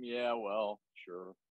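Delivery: mock indifferent, faintly amused, offhand apathetic tone. Imitating how Aaron answers anything: imitating Aaron's bemused apathetic tone. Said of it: "bemused, apathetic sort of tone".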